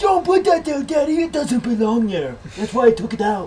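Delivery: put-on high childish pleading voice.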